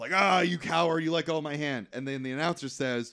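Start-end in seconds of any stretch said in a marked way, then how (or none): 0.1-1.9 angry, scolding, accusing outburst. Retelling an arm-wrestling match as the loser reacts: imitating someone pissed off. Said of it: "all pissed off".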